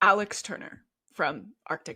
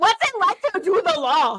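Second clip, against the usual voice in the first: very high, fast, loud, rattled-off celebrity-style voice; 10 semitones higher, 6 dB louder than usual. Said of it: "in her [name] voice asking like".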